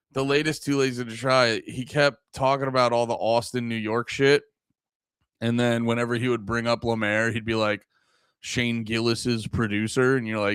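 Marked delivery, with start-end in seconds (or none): 8.4-10.1 put-on flat monotone voice. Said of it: "You monotone bitch".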